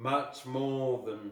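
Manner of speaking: plain reading voice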